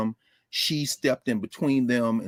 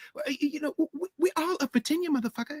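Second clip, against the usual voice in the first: put-on sweet female voice, much higher, quieter; 4 dB quieter than usual. Retell what a professor said about tenure at Medgar Evers, imitating her sweet voice. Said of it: "She had that sweet voice".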